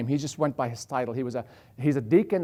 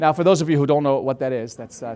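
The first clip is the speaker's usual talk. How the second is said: plain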